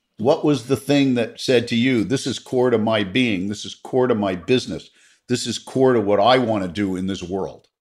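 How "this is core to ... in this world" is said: ordinary talk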